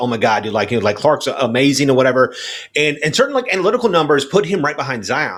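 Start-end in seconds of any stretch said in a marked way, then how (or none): none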